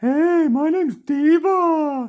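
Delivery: very high, very loud, very slow booming put-on voice, drawn out. Quoting how a bear always introduces herself, in Diva voice. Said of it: "Diva has kind of a funny voice ... is her voice".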